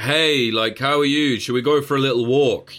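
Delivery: high-pitched mocking tone. Retelling how a shooter called up his victim: imitating a mocking tone. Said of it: "mocking this guy".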